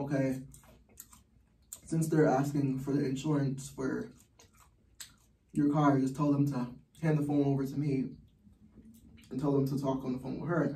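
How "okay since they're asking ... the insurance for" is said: usual speaking voice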